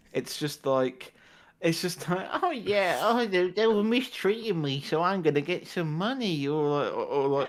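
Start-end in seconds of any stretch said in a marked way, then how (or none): 2.4-6.4 put-on elderly voice, pitched up. Mocking adverts aimed at old people: imitating an old person in an advert. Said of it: "That's basically all the old people adverts are".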